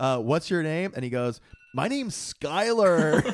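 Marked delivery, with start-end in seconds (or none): 1.7-3.2 satirical put-on surfer voice, much higher, slower. Retelling a phone call with a surf shop worker; imitating Skyler the surfer. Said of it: "satirical impression of a surfer".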